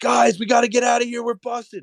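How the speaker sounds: play-acted, high, frantic, panicked scream. Retelling a friend spotting someone in the store: imitating a friend screaming. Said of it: "my friend looks at the store and screams and goes".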